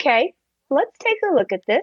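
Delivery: put-on calm, settled teacher-to-children tone. Retelling how people respond when data may be lost, imitating kindergarten-teacher tone. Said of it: "settle into this tone of voice that's like they're in a kindergarten".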